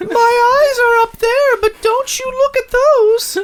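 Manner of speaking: very high, tiny, squeaky little voice. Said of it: "little penis voice".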